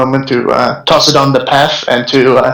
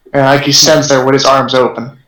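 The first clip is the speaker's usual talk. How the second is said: plain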